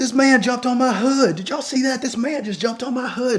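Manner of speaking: frantic, panicked, very high yelling. Retelling a woman jumping out of her car shouting to bystanders; imitating her yelling. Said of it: "And she's just yelling like".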